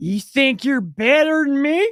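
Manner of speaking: acted slurring, words run together. Retelling a woman who cut in line, imitating her slurred speech.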